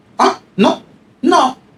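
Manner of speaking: contemptuous brush-off. Retelling a student's reply to the teacher's question: imitating a contemptuous reply. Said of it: "Como con desprecio".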